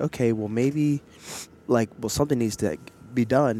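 ordinary talk

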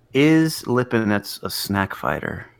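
conspiratorial tone, very close to the microphone. Discussing boxers, the speaker floats a conspiracy question, conspiratorially close to the microphone. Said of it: "I got conspiratorially close to the microphone".

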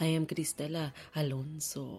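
name said with a Spanish accent. Host introducing herself on her show, saying her name with an accent. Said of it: "I say that with an accent".

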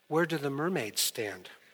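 soft, small voice sounding worried. Retelling a small child's question tugging at a pant leg: imitating a small, concerned voice. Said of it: "small, concerned voice".

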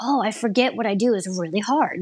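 plain

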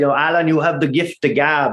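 horrible, bad, put-on Irish accent. Quoting a grandmother's words to Alan, in a horrible Irish accent. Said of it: "That's a horrible Irish accent".

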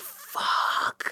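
stunned, soft whisper under the breath.

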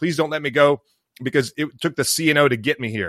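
put-on sobbing, tearful, crying voice. Recounting being told to go while injured, retelling own crying plea. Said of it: "And I'm like crying".

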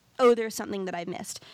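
ordinary talk

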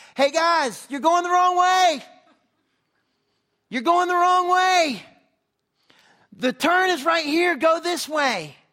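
very loud, high-pitched shouting. Retelling a runner calling the pack back to the turn: imitating someone yelling. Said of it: "he starts yelling at people".

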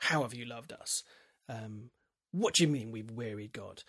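put-on scornful, sneering delivery. Speaker acting out the people's retort to God in Malachi, mock sneering. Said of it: "it is a kind of sneering".

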